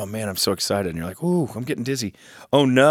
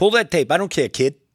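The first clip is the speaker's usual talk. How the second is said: thick put-on Boston accent, pitched up; 7 semitones higher than usual. Retelling what he said when the bet tape came up, Boston accent impression. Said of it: "He said something very Bostonian".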